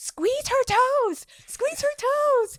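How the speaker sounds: very high-pitched, drawn-out, shouted yell. Retelling a panicked delivery-room moment: imitating someone yelling. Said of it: "And I'm yelling at him".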